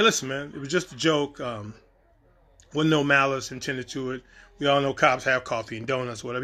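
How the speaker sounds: ordinary delivery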